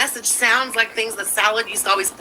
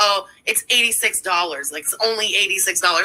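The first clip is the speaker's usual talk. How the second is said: plain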